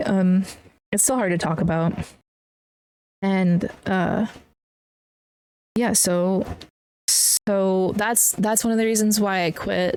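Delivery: slow, struggling to hold back tears. Speaking about why they quit the firehouse, holding back tears. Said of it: "Sorry, I'm trying not to cry".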